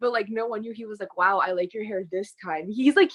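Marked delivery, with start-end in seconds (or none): 1.2-2.7 imitated, put-on sarcastic tone. Retelling what he said about her hair, imitating Sean's sarcastic remark. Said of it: "very, like, sarcastic".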